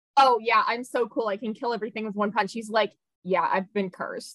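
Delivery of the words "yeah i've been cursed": mock deadpan, flat toneless put-on delivery. Retelling how a one-punch fighter talks about his power, mock-deadpan. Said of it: "He's just so deadpan about it".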